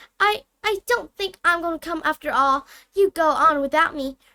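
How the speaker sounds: high-pitched loud voice. Reading a story, the narrator voices a reply from behind a door: high-pitched Hermione voice. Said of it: "A high-pitched voice answered him".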